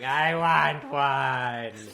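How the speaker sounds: very loud, high tearful crying, one word stretched. Retelling how she cried at Christmas Mass: imitating someone crying. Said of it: "she was crying, going".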